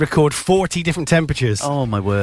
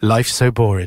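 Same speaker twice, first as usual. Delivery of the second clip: sad, mournful reading; 5 semitones lower than usual. Reading out a listener's message on air: sad reading. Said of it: "Let me just do it in a not sad way".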